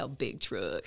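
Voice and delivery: put-on very low southern country boy accent. Asked to do the accent again, repeating the phrase in a country accent. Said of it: "Can I hear that accent again?".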